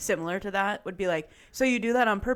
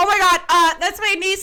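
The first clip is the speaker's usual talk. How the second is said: flustered apologetic tone, higher and louder; 11 semitones higher, 10 dB louder than usual. Retelling an aunt's words to a bank teller: imitating someone flustered. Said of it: "my aunt was absolutely flustered".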